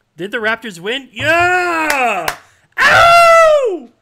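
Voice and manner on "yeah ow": very loud, very high scream with wild pitch swings. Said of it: "Sorry if I screamed in your ear".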